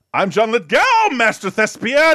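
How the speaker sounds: loud, very high, drawn-out shriek. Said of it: "a loud, screaming".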